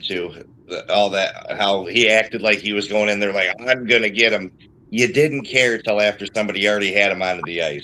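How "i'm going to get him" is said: ordinary delivery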